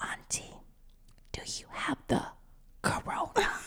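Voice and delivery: hushed, half-mouthed whisper. Retelling what the niece whispered to her aunt: imitating niece whispering. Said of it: "she whispers and she goes".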